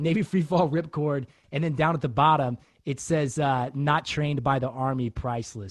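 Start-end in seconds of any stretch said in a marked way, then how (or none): none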